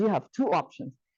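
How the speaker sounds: mock anger, pitch falling. Retelling to former students what was said back then: retelling a low angry voice. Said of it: "And when I get angry".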